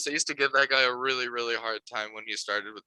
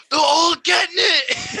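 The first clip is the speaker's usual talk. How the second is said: shrill, very high, very loud screaming; 12 dB louder than usual. Retelling a fighter's post-fight interview: imitating someone screaming. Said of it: "He's just screaming".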